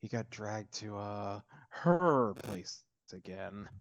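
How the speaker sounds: slow muttered aside under the breath. Playing a character adding a remark about where someone went: said under his breath. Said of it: "and he says this under his breath".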